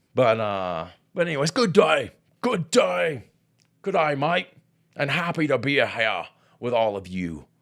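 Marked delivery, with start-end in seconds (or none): 1.5-6.3 fake, botched Australian accent, pitched up. Greeting everyone, happy to be here: put-on australian accent. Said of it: "that accent would be so fun to have".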